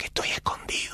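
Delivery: put-on hushed speech. Retelling a hiding reporter's live radio answers: imitating someone speaking low. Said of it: "¿por qué hablas tan bajo?".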